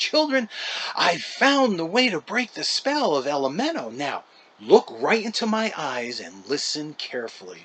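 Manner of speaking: jubilant, triumphant, breathless delivery. Narrator reads a man announcing to the gathered children, jubilant, catching his breath. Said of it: "catching his breath and announcing in a jubilant voice".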